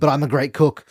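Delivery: ordinary talk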